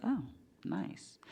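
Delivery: whispered, impressed, under the breath. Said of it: "I was like".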